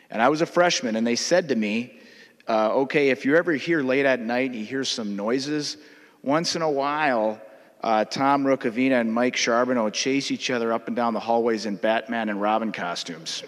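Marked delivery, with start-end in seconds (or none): none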